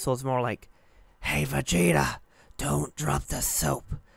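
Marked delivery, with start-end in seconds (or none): 1.2-3.8 whispered, failed put-on voice. Speaker showing how their old voice attempt sounded, whispery Nappa impression. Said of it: "sounded more like I was whispering it".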